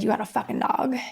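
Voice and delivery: mock drunk, angry man voice. Retelling what a man said on seeing her with the puppy: mock drunk and angry. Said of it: "He's really drunk and angry".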